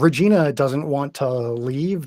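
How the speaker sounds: ordinary talk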